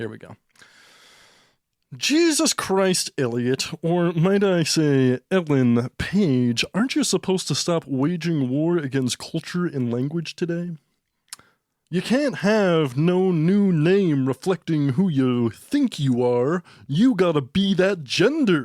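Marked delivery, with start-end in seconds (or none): 2.0-18.7 slow, drawn-out, over-enunciated lecturing academic delivery. Acting out a sketch as Jordan Peterson, addressing the other speaker as Elliot Page: Jordan Peterson impression. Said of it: "I'm gonna be Jordan Peterson".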